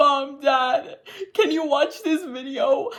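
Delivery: high, tearful, pleading voice through the sobs. Retelling asking their parents to watch a video while crying: imitating own crying. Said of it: "I was literally crying".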